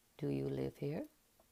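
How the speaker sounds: soft, quiet, detached, impersonal tone. A stranger at the gate speaks to someone, in a soft, impersonal voice. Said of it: "a soft, impersonal voice came from between them".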